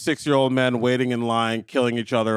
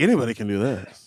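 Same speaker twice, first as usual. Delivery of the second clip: ordinary talk, nothing marked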